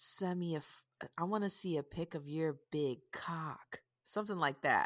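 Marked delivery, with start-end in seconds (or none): 0.0-3.8 sexy, seductive voice, quieter. Showing how to ask for a picture by text: sexy. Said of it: "How do you say it sexy?".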